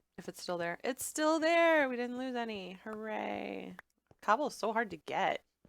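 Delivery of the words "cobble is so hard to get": tongue-in-cheek, dry sarcastic tone. Picking up leftover cobble in the game, remarking: sarcastic. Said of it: "she said sarcastically".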